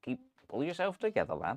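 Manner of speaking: bouncy, swooping sing-song cartoon voice, pitch rising and falling. Doing a cartoon character line for the other speaker: Wallace from Wallace and Gromit impression. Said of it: "That's a good impression".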